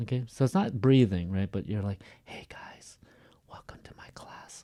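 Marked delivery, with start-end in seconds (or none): 2.2-4.6 very quiet, voiceless whisper. Speaker demonstrates whispering while defining it, whispering. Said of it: "you're not using your vocal cords".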